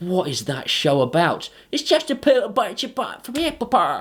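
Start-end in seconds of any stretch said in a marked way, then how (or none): 1.7-4.0 poor, fake Essex accent in a higher pitch. Answering a question about what a show is about, doing a bad Essex accent impression. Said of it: "impression of someone from Essex".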